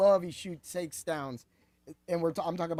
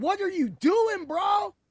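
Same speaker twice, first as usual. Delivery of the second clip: high, slow, incredulous shout. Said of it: "Chime In was like".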